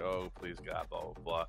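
put-on crying with tearful pleading tone. Retelling a man begging for his life, imitating crying and begging. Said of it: "he's crying and begging and was like".

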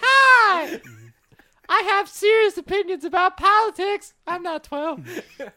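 very high, loud helium squeak voice. Speaker shows what turning their pitch way up sounds like: very high helium voice. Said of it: "turn my pitch way up".

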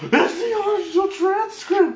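very loud, very high, drawn-out excited yell. Recounting seeing original comic transcripts with others, retelling a yell. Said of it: "we literally are yelling like".

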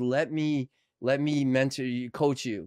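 ordinary delivery

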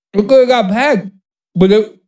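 speaking with a mouthful of beer. Chatting with friends, talking with beer in your mouth. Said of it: "I'm trying to talk with beer in my mouth".

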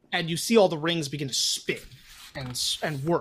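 ordinary talk

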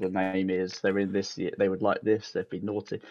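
plain

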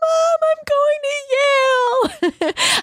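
very high, very slow, drawn-out tearful crying scream. Retelling a classmate's phone call on match day: imitating screaming while crying. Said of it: "one girl in our class screaming into the phone and crying".

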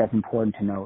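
usual speaking voice

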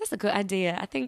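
terrible put-on British accent. Retelling a reply to a coworker who joked about a British accent: bad British accent. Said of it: "oh, that was terrible".

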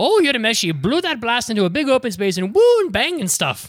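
very high, loud, excitable put-on Irish accent. Describing the tornado character from an anime dub: imitating a dubbed irish character. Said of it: "That's exactly how he sounds".

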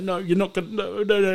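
bawling, anguished, grief-wracked sobbing cry. Retelling a scene where she dies in his arms, quoting him: imitating anguished crying. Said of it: "it is the most convincing cry".

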